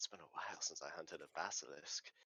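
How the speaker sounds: whispering under breath. A game player speaking as his character to the group, whispering under his breath. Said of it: "kind of whispers under his breath".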